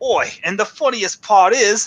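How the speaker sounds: high-pitched, fake Australian accent. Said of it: "I don't know why he was Australian".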